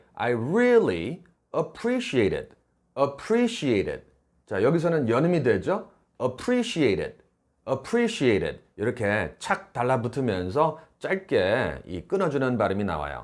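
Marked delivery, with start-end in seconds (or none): 0.2-2.5 really set apart and strongly stressed. English phrase lesson taught in Korean: strong stress on really. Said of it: "really 좀 띄워서 강하게".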